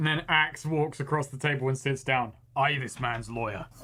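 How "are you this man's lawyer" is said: blunt, primitive caveman way of talking. In a tabletop game, voicing Axe as he sits at the table: Axe caveman voice. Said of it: "considering it was just caveman voice".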